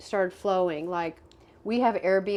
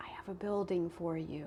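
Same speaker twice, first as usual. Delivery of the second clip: very quiet, soft-spoken, hushed voice; 10 dB quieter than usual. Retelling a God memo received while planning a life purpose, very quiet voice. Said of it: "very quiet voice that says".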